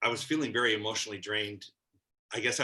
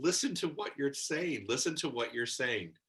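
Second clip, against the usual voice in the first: put-on restrained, mild, urgent outcry; 4 semitones higher than usual. Recounting a discussion where you screamed out at the others, retelling your own scream. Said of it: "And I screamed it out".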